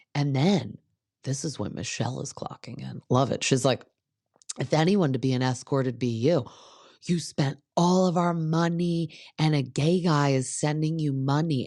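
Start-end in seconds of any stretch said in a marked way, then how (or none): 4.6-11.7 put-on loud, slowed delivery. Speaker recounts what Michelle said during a screaming fight: retelling Michelle talking loudly. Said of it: "saying it so loud so like everyone can hear".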